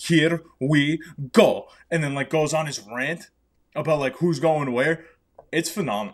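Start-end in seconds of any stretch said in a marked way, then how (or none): 0.0-1.7 put-on slow, drawn-out Italian accent. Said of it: "when that dude comes out with his accent and goes".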